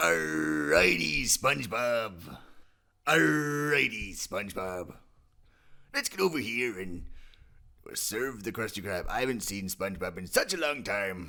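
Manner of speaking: Irish and pirate blend accent. Explaining how to build an Irish pirate accent, then trying it; Pirish Irish-pirate voice. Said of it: "The Pirish voice".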